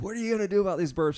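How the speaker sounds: shrill, demanding yell, pitched very high. Retelling a partner's complaint about burps: imitating Jenny yelling. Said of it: "Can you see her yelling at me".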